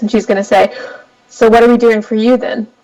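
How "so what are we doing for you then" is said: earnest, serious, sober delivery with the jolly lilt dropped. Narrating a scene where Ashling speaks up, serious Ashling, not jolly. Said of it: "she's going to be kind of serious for once".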